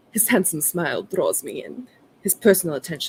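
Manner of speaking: put-on loose, soft hint of a Slavic accent. Asked to do their best voice acting, narrating a scene: vague Slavic accent. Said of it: "could you like a vague Slavic accent then".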